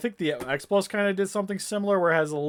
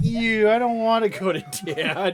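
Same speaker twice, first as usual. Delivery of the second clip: put-on pitched-up baby voice; 6 semitones higher, 4 dB louder than usual. Talking for the baby while she eats: voicing the baby's thoughts. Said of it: "you're like".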